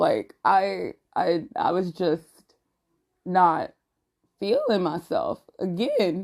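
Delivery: breaking voice, cracking mid-line. Speaker recalls not feeling like themselves again, voice cracking. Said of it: "why did my voice crack like that".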